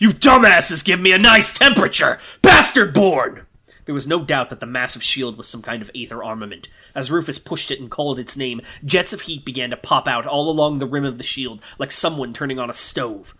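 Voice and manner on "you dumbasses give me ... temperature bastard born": put-on roaring warrior voice, higher and louder. Voicing a warrior pushing his shield forward: Rufus roaring. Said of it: "he roared".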